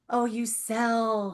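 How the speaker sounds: disapproving, distasteful, acted out, "sell" drawn out. Retelling how someone reacted to selling: imitating a disapproving tone. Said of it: "You said it like it was a, the F word".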